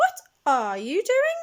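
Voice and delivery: put-on piercing, shrill, very high old woman voice calling. Reading the story aloud, voicing Grandma calling from the next room: shrill voice. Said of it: "Came a shrill voice".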